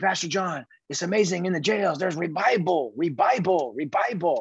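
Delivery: put-on Puerto Rican accent, laid on thick. Retelling what a prison ministry worker told him, in a thick Puerto Rican accent. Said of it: "he had a really thick puerto rican accent".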